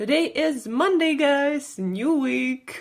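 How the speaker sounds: super excited, pitched high. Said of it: "as you can hear, I'm super excited".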